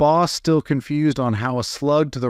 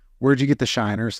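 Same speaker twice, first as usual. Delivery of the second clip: ordinary talk, nothing marked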